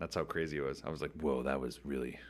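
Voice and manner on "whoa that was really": buzzing, droning, vibrating voice like a didgeridoo. Retelling standing up after a didgeridoo sound bath: imitating a vibrating didgeridoo voice. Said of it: "You sound like the didgeridoo".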